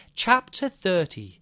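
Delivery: put-on received-pronunciation English accent. Describing how the reader announced chapter numbers, in Anne Flosnick's RP English accent. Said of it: "in this kind of very like received pronunciation English accent".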